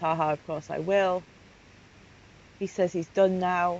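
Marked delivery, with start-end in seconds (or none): none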